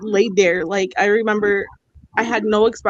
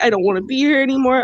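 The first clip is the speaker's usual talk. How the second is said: put-on tearful voice, higher. Recounting a distressing moment to a listener, acting out what was said to a sister while in tears. Retelling a tearful plea. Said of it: "I was just in tears".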